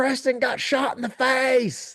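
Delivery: thick South Louisiana drawl, very high and slow. Retelling what a guy he heard shouted about preston, thick south louisiana accent. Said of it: "he's from South Louisiana, and he's got a real thick accent".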